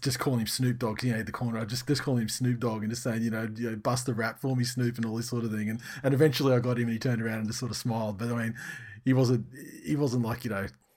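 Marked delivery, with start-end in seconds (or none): none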